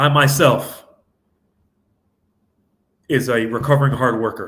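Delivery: carefully slowed-down, slow, deliberate delivery. Speaker slowing down to say it correctly to listeners; slowing down deliberately. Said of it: "Let me slow down and say this correctly".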